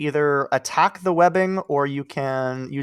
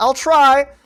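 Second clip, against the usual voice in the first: panicky, very high and loud cry; 12 semitones higher, 9 dB louder than usual. Voicing a character hiding behind cover: panicked in character. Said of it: "She's kinda, like, panicking".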